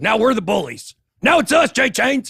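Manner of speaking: loud, high-pitched, taunting mock bully voice.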